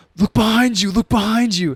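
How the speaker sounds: high-pitched, loud yelling. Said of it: "he's yelling at the screen like".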